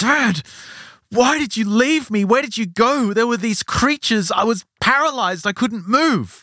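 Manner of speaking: mock really angry kid voice, very high. Retelling a story, the speaker voices a son confronting his returned father: imitating an angry son. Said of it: "he's really angry".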